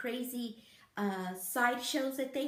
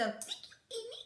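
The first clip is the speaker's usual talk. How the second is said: tiny, very high, soft, put-on squeaky voice; 11 semitones higher, 5 dB quieter than usual. Thanking a friend for the collab in a put-on little squeaky voice. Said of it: "My little squeaky voice".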